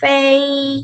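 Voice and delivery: fei kept high, flat and level. Tone lesson on level tones: high level tone on fei. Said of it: "tinggi mendatar ... suaranya agak tinggi ... ya mendatar".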